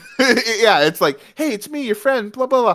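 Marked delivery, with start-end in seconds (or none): 1.4-2.8 flirty, slightly pitched-up cartoon voice. Describing how he says a line before a pause, imitating flirty Sonic. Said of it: "flirty Sonic".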